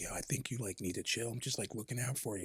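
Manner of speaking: hushed, barely audible, very quiet whisper. Retelling how a guy pulled him aside to talk: retelling a whisper. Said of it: "he's like whispering to me".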